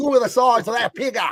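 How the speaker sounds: put-on Australian accent, a bit nasal, high. Recalling what the speaker used to yell at work, put-on australian accent. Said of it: "I think I got it a little bit".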